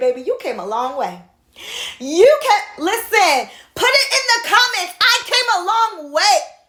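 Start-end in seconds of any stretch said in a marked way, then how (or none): 2.0-6.4 high, fired-up screaming, bursting with excitement. Speaker addressing listeners who comment, excited screaming. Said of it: "Let me stop screaming".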